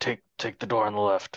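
hushed whisper. Voicing a character warning the others about a nearby beast: whispering. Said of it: "Jarzak's just gonna whisper".

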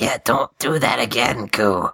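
voiced stage whisper. In a role-play scene, speaking to Ku, half-whispering. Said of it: "I whisper".

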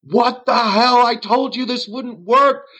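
very high mock scream of agony. Retelling a scene where Parnas gets hurt, retelling a scream of pain. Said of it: "screaming his head off".

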